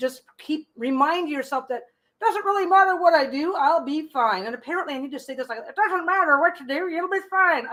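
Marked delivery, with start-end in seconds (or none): 5.6-7.7 put-on old woman voice, high. Speaker repeating a reassurance to listeners, in an old lady voice. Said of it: "If I talk in my old lady voice".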